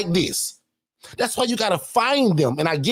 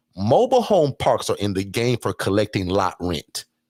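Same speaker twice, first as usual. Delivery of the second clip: very low, slow, drawn-out, careful, deliberate; 12 semitones lower than usual. Speaker tells the audience to remember this point, saying it slowly. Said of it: "I'm going to say it slow".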